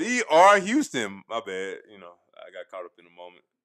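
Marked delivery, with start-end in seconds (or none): 0.0-1.2 high, loud, slow belted yelling. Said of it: "you blowing my eardrum out".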